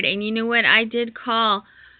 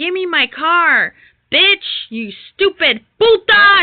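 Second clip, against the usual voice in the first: put-on angry yell, high, loud and drawn out; 8 semitones higher, 5 dB louder than usual. Retelling a call where the mother yelled at the speaker: imitating someone yelling. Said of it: "She was yelling at me on the phone".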